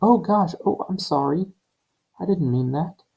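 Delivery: very high, sweetly innocent tone. Explaining how sarcasm sounds, speaker demonstrates an innocent apologetic tone. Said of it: "Very innocent sounding, like".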